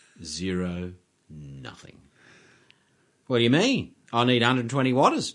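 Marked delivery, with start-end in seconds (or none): 3.3-5.3 put-on twangy voice, much higher and louder. Retelling what car audio customers used to say, in a twangy car audio customer voice. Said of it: "not all car audio customers have that particular voice".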